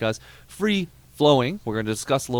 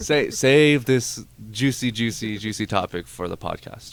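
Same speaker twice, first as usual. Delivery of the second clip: ordinary talk, nothing marked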